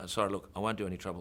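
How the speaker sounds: ordinary delivery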